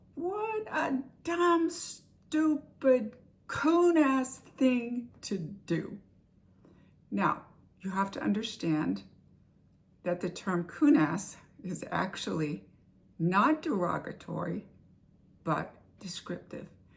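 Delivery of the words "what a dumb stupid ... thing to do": high, very drawn-out, slow, furious angry yell, acted out. Retelling yelling at someone who did the wrong thing: imitating own angry yell. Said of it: "So I yelled out".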